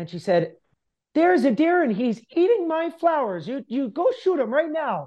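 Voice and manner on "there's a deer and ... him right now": put-on high-pitched, old-sounding Ukrainian accent. Retelling the speaker's meme ordering a deer shot, old Ukrainian accent. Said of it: "in her old Ukrainian accent".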